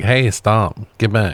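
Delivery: mock calm, mild dismissive tone. Retelling a character's reaction to being attacked: imitating a calm underreaction. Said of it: "this bitch is underreacting".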